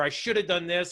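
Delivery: ordinary delivery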